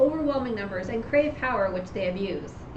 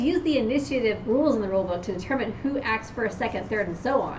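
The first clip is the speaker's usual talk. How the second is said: usual speaking voice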